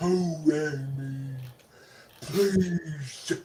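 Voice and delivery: overacted, hammy vampire voice, high pitch, slow pace.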